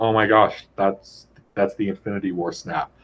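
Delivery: normal talking voice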